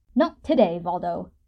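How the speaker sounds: sharp, cutting in. Yaskier cuts in on Valdo, sharp interjection. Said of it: "Yaskier interjects sharply".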